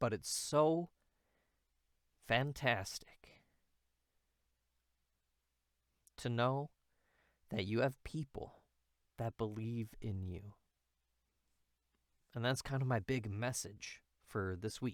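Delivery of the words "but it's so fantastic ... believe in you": halting, choked-up, breaking voice, fighting back tears. Sharing this week's message with an audience; holding back tears. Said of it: "trying not to cry".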